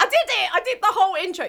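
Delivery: high, very loud, rushed, thrilled outburst. Celebrating finishing the podcast intro without a mess: excited. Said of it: "that was just me getting excited".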